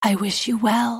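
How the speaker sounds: put-on whisper. Retelling a courtroom exit to the other party: imitating Gwyneth Paltrow whispering. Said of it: "leans over to him and whispers".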